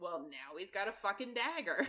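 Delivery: normal talking voice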